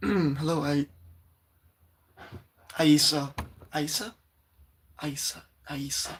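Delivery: strained, airy, weak, worn-out voice. Apologizing for a voice worn out from yelling: strained, airy lost voice. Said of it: "I'm very sorry for my voice".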